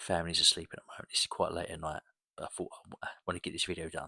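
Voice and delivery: whispered voice. Recording a video late at night while the family sleeps, whispering. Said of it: "I apologise if it sounds like I'm whispering".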